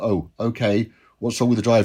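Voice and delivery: ordinary talk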